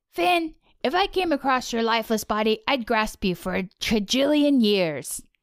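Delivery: rough, poorly done cartoon dog voice. Taking a turn to share a line, done as a Jake impression. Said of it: "mine is a Jake".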